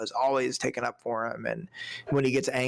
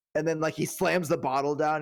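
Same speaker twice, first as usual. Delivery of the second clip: plain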